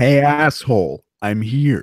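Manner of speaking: unhurried, slow, deliberate, drawn-out delivery. Greeting G C, who has just joined the chat: impression of G C. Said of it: "That's my impression of you".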